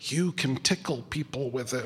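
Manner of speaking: soft, secretive half-whisper under the breath. Retelling what a three-year-old said while handing over a feather: imitating a child half-whispering. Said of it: "he lowered his voice to a whisper".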